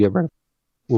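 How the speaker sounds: voice breaking and cracking. Recalling a game sequel dropping a character, voice cracking. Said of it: "Ooh, voice crack".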